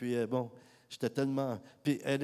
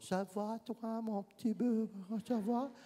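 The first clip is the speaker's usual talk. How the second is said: put-on very high, soft, small baby-talk voice; 9 semitones higher, 5 dB quieter than usual. Speaker recalls talking to a lady in a wheelchair as to a child, baby-talk little voice. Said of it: "on parle avec une petite voix".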